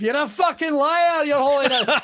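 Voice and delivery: mock screaming.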